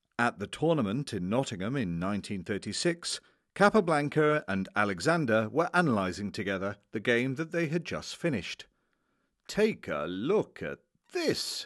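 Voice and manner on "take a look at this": bright, delighted, cheerful, swooping exclamation. Analysing a finished game, the English master calls to those watching: cheerful exclamation. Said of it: "exclaimed the English master, cheerfully looking around".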